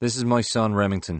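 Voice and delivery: ordinary talk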